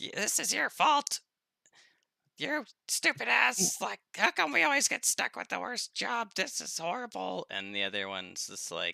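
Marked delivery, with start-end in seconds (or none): 0.0-7.5 very high, fast, rattled-off griping goblin voice. Describing two characters' voices, the speaker demonstrates the first: higher-pitched, faster character voice. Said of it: "a higher pitched, faster one".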